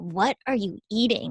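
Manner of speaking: put-on disgusted voice. Speaker retells a coworker walking in on the speaker's lunch, imitating a disgusted coworker. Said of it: "Like in a disgusted like tone".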